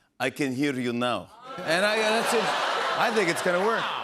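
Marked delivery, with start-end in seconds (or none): 0.2-1.3 fake Russian accent, pitched much lower. Delivering a joke slogan for a new phone service in a put-on russian accent. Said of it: "[ Russian accent ]".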